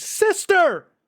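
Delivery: very high, very loud, excited shout. Voicing a character who leaps over the table: excited exclaim.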